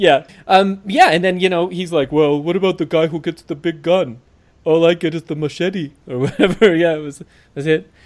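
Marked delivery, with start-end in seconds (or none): 2.4-5.9 speaking in a put-on Austrian accent. Acting out a moment from the episode as a celebrity impression: Arnold impression. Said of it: "that was my celebrity impression of the episode. I just did Arnold".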